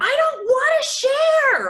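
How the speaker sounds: put-on very high, very loud, drawn-out childlike tantrum scream. Recalling her past self screaming like a six-year-old; imitating her own screaming. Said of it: "I literally was screaming".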